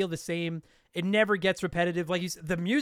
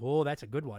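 sarcastic, smart-alecky salesman voice; 6 semitones lower, 4 dB quieter than usual. Imitating the salesman reacting as the player looks at a weapon: imitating sarcastic salesman. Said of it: "that sarcastic guy".

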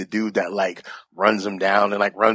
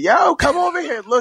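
very high-pitched, screamed, acted-out yell; 3 dB louder than usual. Telling a story, the speaker re-enacts screaming for two people to come look. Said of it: "I'm screaming".

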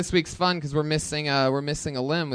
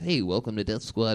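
mock calm guy voice, pitched lower; 4 semitones lower, 3 dB quieter than usual. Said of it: "normal calm guy thing".

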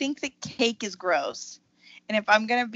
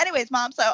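put-on voice of an eight-year-old kid; 3 semitones higher, 4 dB louder than usual. Imitating how an eight-year-old son talks to his mom: imitating an eight-year-old. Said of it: "just talking like my eight-year-old talks to me".

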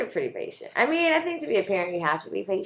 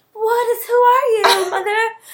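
put-on voice of a little woman, higher-pitched; 11 semitones higher, 4 dB louder than usual. Retelling a daughter's reaction to being yelled at: imitating a little Caucasian woman. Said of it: "like a little Caucasian woman".

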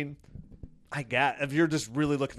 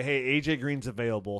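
ordinary delivery

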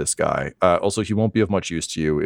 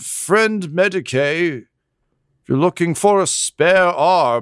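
shouting, higher pitch; 11 semitones higher, 3 dB louder than usual. Voicing a character calling over to the medic down the alley: yelling. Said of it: "he just yells".

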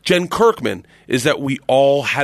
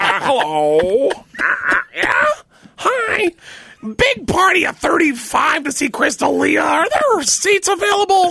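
very high, slow, swooping, put-on parrot voice. Acting out a prank call asking about seats: prank caller voice like a parrot. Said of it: "there's a parrot on the phone calling for seats".

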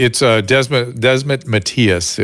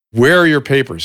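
mock screaming, higher and faster; 3 semitones higher than usual. Repeating how a 27-year-old screamed at a longtime attending, imitating someone screaming.

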